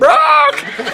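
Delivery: very high squawking bird alarm call. Teasing another speaker about his name: imitating a bird's warning call. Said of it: "Like a bird that warns of danger".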